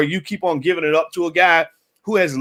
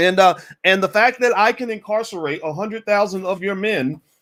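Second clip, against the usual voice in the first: ordinary delivery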